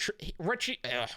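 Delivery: stuttering badly, tripping over words. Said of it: "I stuttered there badly".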